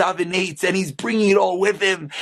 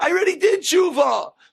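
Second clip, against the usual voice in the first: play-acted, shrill yell, pitched way up high; 10 semitones higher than usual. Retelling a neighbor answering a loud tape at night, imitating someone yelling. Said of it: "he yells out".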